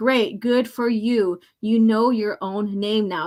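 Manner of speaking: acted, mock sarcastic tone. Reading a comic character's reply aloud: acting out a sarcastic character line. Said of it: "Now he's being sarcastic".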